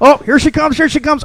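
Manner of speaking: wildly animated, high-pitched, eager, building anticipation. Retelling a comedian's joke about dial-up downloads: imitating a comedian, very animated. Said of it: "It's the most animated I've ever seen".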